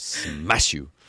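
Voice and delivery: put-on British accent. Mimicking how Jake says smash, imitating Jake's British accent. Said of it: "I love how he says smash with his British accent".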